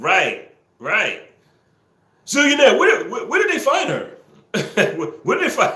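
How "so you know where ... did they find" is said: very high, dopey put-on dumb voice. Doing a voice some people asked for, in a put-on dumb voice. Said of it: "give them the dumb voice".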